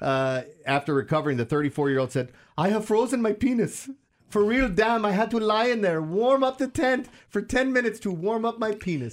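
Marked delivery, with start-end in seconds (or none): 2.6-9.1 put-on Bombay-sounding accent, much higher pitch. Speaker quoting a 34-year-old competitor to co-hosts, in a Bombay-sounding accent. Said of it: "they're sounding from Bombay".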